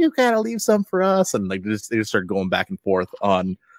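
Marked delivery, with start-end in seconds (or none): 0.0-1.3 mock very high, shrill scolding shout. Retelling how the lady behind him yelled at him, retelling a yell. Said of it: "the lady behind him just started just yelling at him".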